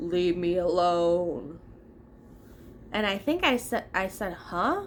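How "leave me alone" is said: really low deep voice, last word slowly drawn out. Retelling a man whose eyes rolled back, in a really low voice. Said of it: "he he says in a really low voice".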